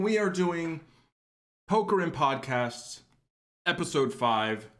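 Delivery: talking with mouth full. Introducing the podcast episode while still eating, talking while chewing. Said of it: "Sorry, I'm still chewing".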